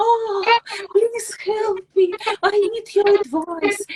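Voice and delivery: very high, sweet-as-pie, sugary pleading. Describing people who call for hours asking for help, imitating someone overly nice. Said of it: "they will be so nice".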